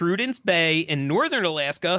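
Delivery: ordinary delivery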